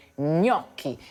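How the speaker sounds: gnocchi with weight on first syllable gno. Teaching how to say gnocchi, stress on first syllable of gnocchi. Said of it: "that first syllable, that's the one you really need to put the emphasis on".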